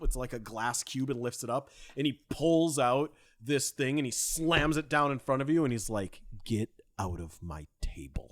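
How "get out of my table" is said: very low, hostile, aggressive delivery. Narrating a game moment, voicing his line as he slams it down: mock-aggressive line. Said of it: "very aggressively reaches into".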